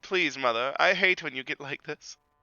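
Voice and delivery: put-on cartoon schoolboy voice. Playing the child answering a scolding mother in a comedy bit; Pip from South Park voice. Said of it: "Like we're fucking Pip from South Park".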